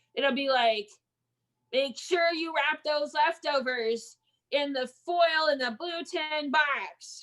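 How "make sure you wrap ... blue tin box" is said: stern, bossy, strict teacher voice. Anticipating instructions at home for Christmas, imitating a bossy teacher voice. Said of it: "she'll use her teacher voice when she tells you what to do".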